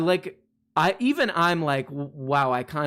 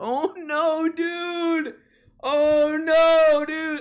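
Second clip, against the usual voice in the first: drawn-out, very high, slow, lovable whine; 4 dB louder than usual. Showing the chat an impression he is still working on: imitating a lovable whininess. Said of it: "a lovable whininess about his".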